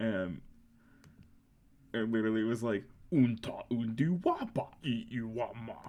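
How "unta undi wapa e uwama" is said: put-on alien creature voice. Retelling a tabletop session, doing a Hutt impression for the DM. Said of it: "do a good hut impression".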